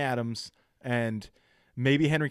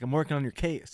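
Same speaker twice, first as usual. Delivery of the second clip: ordinary delivery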